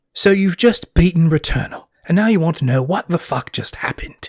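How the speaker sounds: put-on British accent. Mimicking a British YouTuber explaining a video game, Michael Caine impression. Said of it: "I'm kind of just doing Michael Caine".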